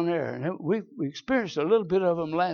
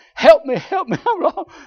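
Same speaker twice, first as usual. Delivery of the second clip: high, loud, hollering yell; 11 semitones higher, 9 dB louder than usual. Telling of being lost in the woods, reenacting screaming for help. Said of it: "I'm screaming, I'm hollering, I'm yelling".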